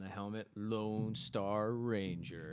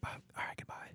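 hushed whisper under the breath. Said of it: "Why do we always whisper?".

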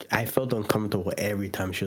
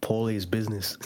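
usual speaking voice

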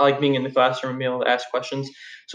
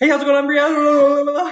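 mock rushed, rapid-fire words, much higher pitch; 13 semitones higher, 5 dB louder than usual. Retelling how someone rushed her with a greeting, imitating someone rushing words. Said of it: "Spewing words at me".

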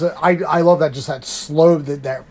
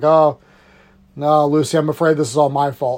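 plain

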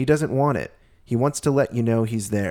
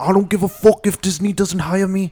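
put-on belted, fired-up outburst in a British accent; 8 semitones higher, 6 dB louder than usual. Quoting a celebrity standing up for people: John Boyega impression. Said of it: "that's my John Boyega impression".

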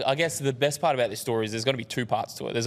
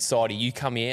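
usual speaking voice

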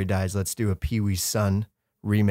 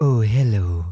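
raised, big, spooky horror-movie host voice; 6 dB louder than usual. Trying out an intro voice for Monster Pulse, a Vincent Price voice. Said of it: "The Vincent Price".

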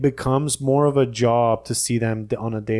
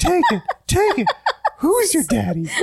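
cartoon mouse voice, much higher. Joking about cartoon voices in the bedroom, in a Mickey Mouse voice. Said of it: "making Mickey Mouse voices in the".

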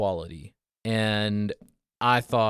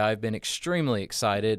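normal talking voice

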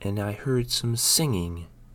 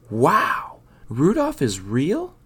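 slow, loud, swooping storybook-style exclaiming; 6 semitones higher, 5 dB louder than usual. Shown Santa's reindeer, Snowy exclaims. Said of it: "Snowy exclaimed".

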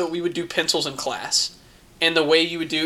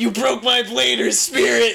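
high, raspy, angry cry; 6 semitones higher than usual. Recounting getting angry at a boy who kept cheating at Beyblades: retelling a yell. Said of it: "And I yelled".

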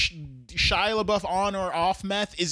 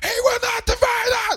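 put-on man yelling, higher and louder; 5 dB louder than usual. Retelling how Shia LaBeouf yelled at protesters: imitating Shia LaBeouf yelling. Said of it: "You're yelling at protesters".

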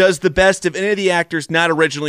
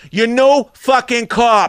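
put-on over-the-top Boston accent, higher pitch; 6 semitones higher than usual. Quoting a movie line after praising an actor's accent: Mark Wahlberg Boston accent. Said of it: "Mark Wahlberg's accent".

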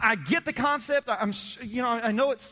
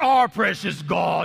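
creaky, deep, rough horror-movie overdub voice; 5 semitones lower, 6 dB louder than usual. Comedian mimicking a man praying, in a horror-movie overdub voice. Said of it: "why do you sound like a horror movie overdub voice".

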